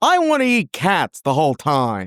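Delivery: slow, drawn-out put-on voice with swooping pitch. Trying out a just-invented impression for the others: Alf impersonation. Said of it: "It goes a little bit something like this".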